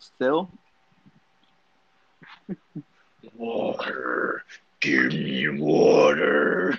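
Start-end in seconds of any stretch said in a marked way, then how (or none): 3.3-6.8 creepy, very low, slow demon voice. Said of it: "make a really deep voice".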